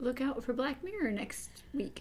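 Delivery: worn-out, hoarse voice, barely there. Giving final thoughts at the end of an episode: lost voice. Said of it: "with your no voice?".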